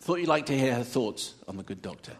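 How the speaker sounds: usual speaking voice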